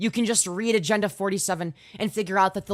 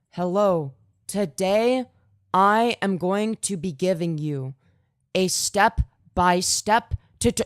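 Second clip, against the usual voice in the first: very slow, dragging, plodding delivery. Mocking a streamer who talks too slowly: imitating slow talking. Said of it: "Talks too slowly".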